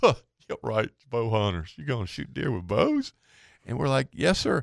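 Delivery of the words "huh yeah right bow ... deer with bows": put-on laughing through the words, swooping pitch. Retelling a man's reply on hearing their hunting plans, imitating a man chuckling. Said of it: "He starts chuckling".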